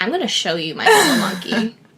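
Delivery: sleazy, suggestive, creepy man voice. Imitating a friend showing off his toy monkey: imitating a creepy pervy man. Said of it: "I didn't say it like that. That makes me sound perverse".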